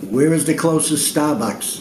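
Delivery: strong Boston accent. Asking a phone assistant a question to test recognition: strong boston accent. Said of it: "he does have quite a strong Bostonian accent".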